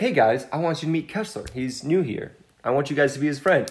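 plain

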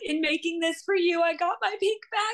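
very high, weepy, tearful crying speech. Retelling how a woman cried while recording herself opening the box, imitating her crying. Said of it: "she just starts crying. She's like".

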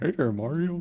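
put-on high, creaky old guy voice. Describing a remake where Toad talks: imitating Toad as an old man. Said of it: "old man Toad, and he's like".

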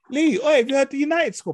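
very high-pitched, loud shouted call. Retelling a phone call to a friend after a game: retelling own loud phone call. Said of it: "I'm speaking loud".

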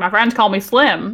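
put-on imitated cowboy accent. Retelling a scene where a character introduces himself: Cowboy Slim accent. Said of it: "comes in with, like, an accent, Cowboy Slim".

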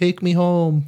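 high, pleading puppy voice.

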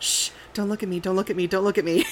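acted hushed whisper. Retelling sneaking past cultists; retelling a whisper to oneself. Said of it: "I'm just like whispering to myself".

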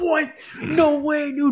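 acted out thrilled disbelief, very high, drawn out. Retelling a radio call about the downed deer, imitating uncle's excitement. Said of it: "He's all excited and shit".

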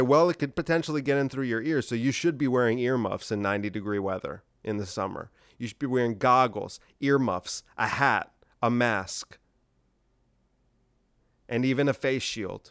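ordinary talk, nothing marked

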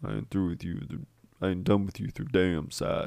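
low and menacing tone. Quoting a favourite line from a movie scene: Marcellus voice, deep and menacing. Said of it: "I love Marcellus's voice and how, like, just deep and, like, menacing".

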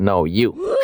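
ordinary talk

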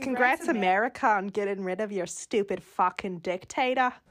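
put-on fake Australian accent. Repeating a comedian's joke, in an australian accent impression. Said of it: "a comedian doing an Australian impression that I was repeating".

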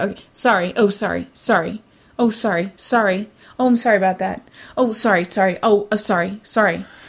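mocking, overly apologetic voice. Mocking people who keep apologizing: imitating a chronic apologizer. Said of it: "People who apologize, I would say".

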